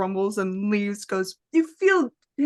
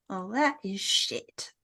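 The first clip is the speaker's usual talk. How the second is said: quiet, slow, breathy, annoyed whispered grumbling; 6 dB quieter than usual. A game master voices the Crossroads Man as darkness engulfs him, quiet grumble. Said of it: "As he kind of grumbles quietly".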